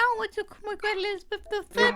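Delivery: very high, babyish mock voice.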